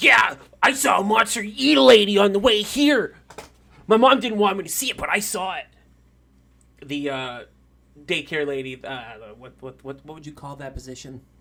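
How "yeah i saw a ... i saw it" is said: put-on very loud, high little orc child voice. In a game scene, the narrator voices an orc child: orc child voice. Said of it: "You see the uh, orc child go".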